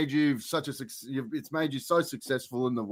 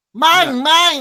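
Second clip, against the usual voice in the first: put-on creature voice, higher and louder; 12 semitones higher, 11 dB louder than usual. Answering a request to do his voice: Mr. Mime voice. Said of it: "I thought I'd give it a crack".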